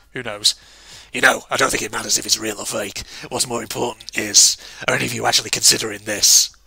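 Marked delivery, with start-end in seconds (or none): 1.1-6.4 really stupid, silly put-on voice, lower. Voicing a game character's line after choosing a voice: really stupid voice. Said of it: "Maybe something really stupid".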